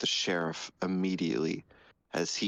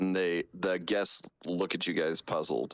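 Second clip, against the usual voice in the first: ordinary talk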